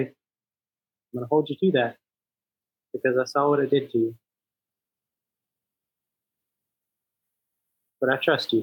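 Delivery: fast, earnest, serious, gently caring tone. A player's character looks at Ugluck and answers him, serious but caring. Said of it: "in the most serious but caring way say".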